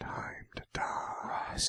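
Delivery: barely voiced, hushed, menacing whisper. Quoting the bald guy's movie line as it should be said: imitating a whispered threat. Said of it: "He's gotta whisper it".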